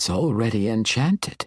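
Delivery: ordinary delivery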